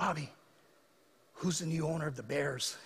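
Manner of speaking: faint, hushed stage half-whisper. Retelling a grandfather's question from intensive care: imitating a half-whisper. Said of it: "he's whispering to me".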